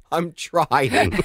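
acted helpless laughing, words squeezed out mid-word. Retelling answering her son while laughing so hard, acting out talking while laughing. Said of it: "through tears, as I was laughing so hard".

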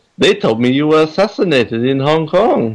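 put-on high-pitched Japanese accent. Quoting a favorite Bond film scene, Blofeld impression. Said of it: "You sounded very Japanese".

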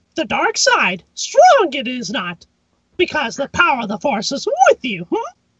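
very high, squeaky voice swooping around. Answering a child's request for an impression: Mickey Mouse doing Yoda. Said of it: "Can you do an impression of Mickey Mouse doing Yoda?".

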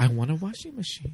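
small, little voice, made small. Discussing Paris Is Burning, a speaker quotes in a soft little Venus Xtravaganza voice. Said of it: "in that soft little Venus extravaganza voice".

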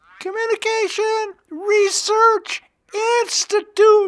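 falsetto, pushed up very high. At the end of a session, saying the institute's name in falsetto voice. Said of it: "I would say in falsetto voice".

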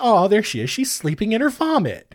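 put-on cold, swooping, patronising adult sarcasm. Retelling what someone said about a girl, mock condescending sarcasm. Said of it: "cold sort of condescending sarcasm".

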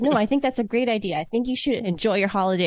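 ordinary talk

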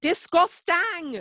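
very high-pitched, exclaimed put-on Scottish accent. Quoting a Scottish woman from a YouTube video, in a Scottish accent. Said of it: "the Scottish woman, have you seen the YouTube video?".

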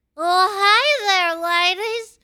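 very high, loud, slow, stretched-out, shrill hi. Imitating Jules, who sits there not saying a word: Jules impression. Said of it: "My Jules impression".

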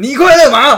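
very high, very loud, shrill yell. Retelling an old joke, acting out one hero calling to another, shouting. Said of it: "张飞就对关羽大叫".

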